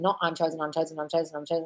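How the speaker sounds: mindless, flat, rote monotone repetition. Demonstrating to a listener how not to practise a statement, mindlessly repeating it in a flat, rote way. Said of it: "say it and think it like a conviction".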